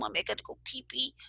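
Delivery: put-on sweet, soft toddler voice, slightly creaky. Retelling what a caller said on the phone: imitating a cute little boy's voice. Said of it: "just his voice was so cute".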